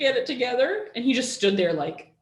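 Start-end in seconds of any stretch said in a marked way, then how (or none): 0.0-0.9 crying, tearful voice with raised pitch. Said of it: "as I'm crying".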